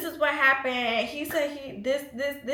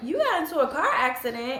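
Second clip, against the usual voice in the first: annoyed, exasperated, irritated tone. Retelling own reply to news of a car accident: imitating own irritated tone. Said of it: "I was so irritated".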